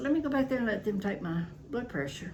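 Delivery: plain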